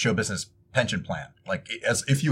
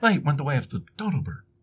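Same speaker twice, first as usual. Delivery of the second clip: cartoony put-on voice, higher pitch; 4 semitones higher, 4 dB quieter than usual. Joking about old phrases after sounding like Shatner: William Shatner impression. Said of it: "I'm sounding like Mister Shatner himself".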